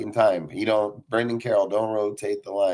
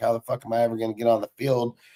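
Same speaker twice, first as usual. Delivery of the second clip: put-on angry, complaining tone. Retelling a quarterback's complaint about too few reps: imitating someone getting angry. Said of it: "getting pissed".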